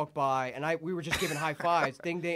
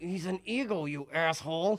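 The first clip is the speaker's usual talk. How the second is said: mock anger through gritted teeth, slower. Retelling what a guy said to them: imitating gritted-teeth anger. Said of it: "he grits his teeth like your dad does when he's mad".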